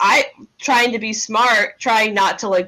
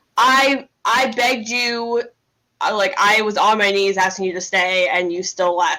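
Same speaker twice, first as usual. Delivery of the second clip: normal talking voice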